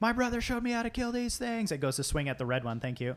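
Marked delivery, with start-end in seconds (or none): 0.0-1.7 high-pitched, all-out scream at full lungs. Narrating a tabletop game as Kaylin runs down: screaming at the top of her lungs. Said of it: "just screaming at the top of her lungs".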